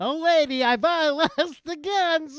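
very high, squeaky, zany comic voice. Retelling a story, the speaker voices a man who comes in: Jerry Lewis impression. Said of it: "That was kind of a Jerry Lewis".

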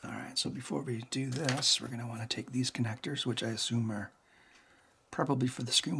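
hushed half-whisper, under the breath. Alone while taking a device apart, speaker narrates the next step, half-whispering. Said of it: "Why am I whispering?".

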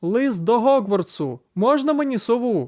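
high, loud yell upward. Someone gathers all his will and calls into the empty sky, yelling. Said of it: "заволав у порожнє небо".

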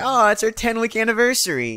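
overly attached gushing voice. On the show's tenth episode, mocking their own anniversary remark; overly attached girlfriend voice. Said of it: "I sound like an overly attached girlfriend".

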